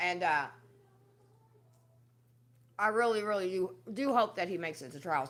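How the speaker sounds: talking while eating, mouth full. Talking to viewers while eating. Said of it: "I'm eating".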